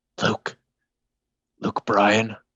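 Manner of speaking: whisper under breath. Testing whether the cockroach responds, whispering a name under breath. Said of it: "I'm gonna whisper under my breath".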